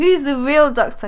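loud, high, slow, mock challenging delivery.

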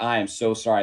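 ordinary delivery

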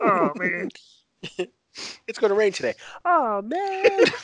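very high invented voice. Doing an impression of Kwame: Kwame impression. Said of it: "That's like your, uh, Kwame impression".

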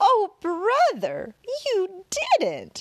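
loud, very high squealing laugh, weak at times. A girl reacts as her brother tells his stories: squealing with a weak laugh. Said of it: "she squealed and laughed weakly".

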